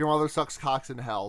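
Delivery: ordinary delivery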